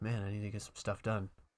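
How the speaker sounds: quiet, soft, low muttering under the breath.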